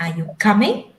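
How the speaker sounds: pitch rises steadily all through the word coming. Teaching how questions sound, rising pitch on coming. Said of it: "We raise at the end of the sentence".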